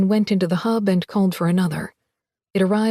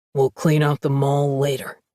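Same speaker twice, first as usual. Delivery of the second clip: deep, authoritative, commanding voice; 6 semitones lower than usual. Reading a guard leader's line aloud: deeper, more authoritative voice. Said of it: "a deeper, more authoritative voice".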